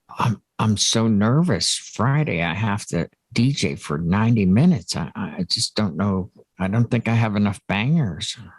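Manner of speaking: mock nervous, fake worried tone. Joking about a ninety-minute DJ set on Friday: mock nervousness. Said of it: "I'm being facetious".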